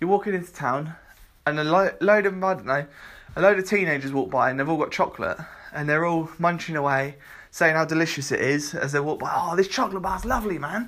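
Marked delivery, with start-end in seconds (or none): 9.3-10.9 put-on teenage boy voice. Describing teenagers walking by in town eating chocolate, doing a teenage lad impression. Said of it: "that's my impression of teenage lads".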